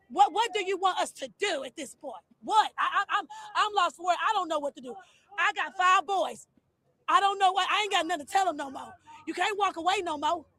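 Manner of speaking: frustrated, fed-up, stumbling outpouring. A parent of five boys speaks to an interviewer, frustrated. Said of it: "I hear the frustration".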